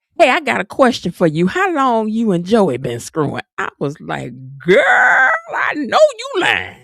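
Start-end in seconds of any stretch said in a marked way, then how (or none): 0.2-3.5 play-acted voice, raised loud and blurted out. Telling a story about a night at a club, retell what a woman said loudly. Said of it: "said loudly".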